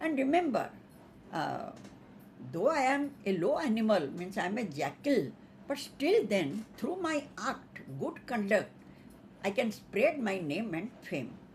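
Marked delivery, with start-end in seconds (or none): none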